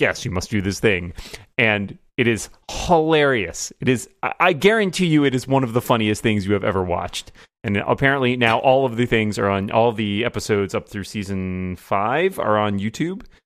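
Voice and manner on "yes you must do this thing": imitated deadpan delivery. Describing how a competition show gives its tasks: imitating a deadpan delivery. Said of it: "presented very, like, deadpan".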